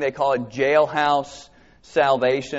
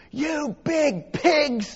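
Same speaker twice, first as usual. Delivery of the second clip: put-on, shrill, very high, top-of-lungs screaming; 13 semitones higher than usual. Retelling being caught out of bed, quoting her screaming at them: imitating someone screaming. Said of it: "she screams at the top of her lungs".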